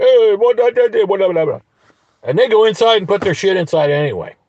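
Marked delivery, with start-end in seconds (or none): 0.0-1.6 high, loud, mock confused tone. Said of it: "they're both looking at me like".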